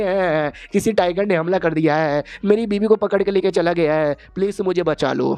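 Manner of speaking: ordinary delivery, nothing marked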